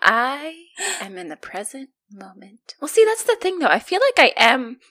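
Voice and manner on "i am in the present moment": very slow, serene, calm zen delivery. Showing a listener how to say an affirmation: as if you are Zen. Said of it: "You have to say it as if you are Zen".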